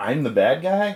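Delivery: put-on sudden surprised realization. Quoting a film character's line at the very end, imitating surprise. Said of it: "like he's surprised".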